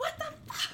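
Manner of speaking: mock calm breaking into furious outburst. Retelling how Daenerys finally snaps at Tyrion: imitating Daenerys snapping angrily. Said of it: "she just finally, like, snaps and loses it".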